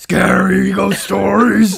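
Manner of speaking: bellowed roughly, pitched high. Reading a show description aloud, Cookie Monster voice. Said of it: "Why did you turn into Cookie Monster?".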